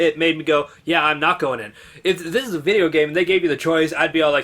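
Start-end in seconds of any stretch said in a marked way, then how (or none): none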